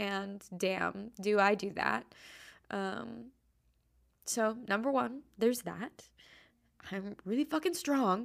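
tearful, crying speech. Podcast host talking to her listeners, crying while talking. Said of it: "as I am crying".

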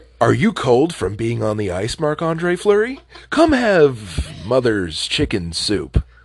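stupid, swooping put-on voice, stretching out "have". Joking about a partner's cooking in a put-on ad voice: stupid put-on voice. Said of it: "you use the stupid voice I use".

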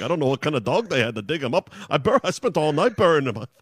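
attempted, put-on Irish accent. Retelling a man's lines to a co-host, in an attempted Irish accent. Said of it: "What was that accent? Was it Irish".

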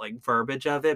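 ordinary talk

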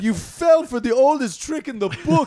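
put-on somewhat Jamaican-sounding accent. Quoting a movie character's line: imitating a Jamaican-ish accent. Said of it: "He gets Jamaicanish there".

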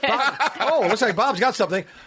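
excited, high, laughing announcer voice.

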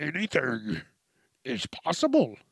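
poor sing-song voice, pitch swooping all around. Trying out a voice after clearing the throat: Yoda voice. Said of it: "Sound like fucking Yoda".

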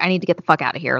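mock frantic blurt, on the edge of panic. Retelling a friend's words in a basement: imitating panicked speech. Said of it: "borderline having a panic attack".

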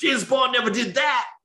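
sudden shouted outburst. Retelling what some guy yelled during a movie, retelling a guy yelling. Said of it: "some guy just yells".

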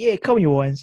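loud shouted reply. Telling a story about a girl walking with her dad, retelling her shout. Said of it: "the girl shouted out".

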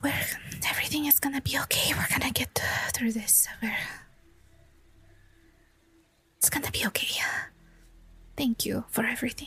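soft whisper, close to the ear. Playing a character hugging someone goodbye before they leave: whispering. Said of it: "she whispers in his ear".

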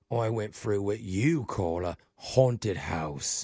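sarcastic tone with audible air quotes. Complaining on a phone call about a haunted house: air quotes in voice. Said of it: "hopefully you can hear the air quotes in my voice".

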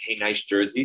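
usual speaking voice

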